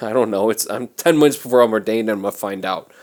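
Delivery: ordinary talk, nothing marked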